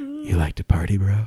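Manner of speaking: hushed, haunting, ghostly half-whisper. Telling a haunted-house tale, the speaker voices the bro's ghost: ghostly half-whisper in your ear. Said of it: "it like whisper in your ear".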